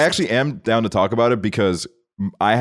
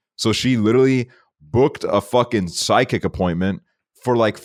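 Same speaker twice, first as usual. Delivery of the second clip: usual speaking voice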